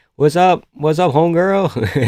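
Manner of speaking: casual, put-on Mexican American accent. Showing how he talks to Latinas at a restaurant: put-on Mexican American accent. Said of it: "try this accent with the Latinas".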